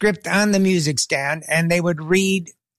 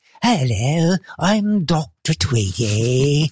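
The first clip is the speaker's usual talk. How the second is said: soft-spoken put-on voice, much slower pace; 2 semitones lower than usual. Recalling a character voice they did, the speaker shows it: soft-spoken Dr. Tweedy voice. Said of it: "he talked something like this".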